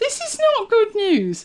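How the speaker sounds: rising to very high pitch. A speaker whose video player will not start, in an increasingly high-pitched voice. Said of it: "she said with an increasingly high-pitched voice".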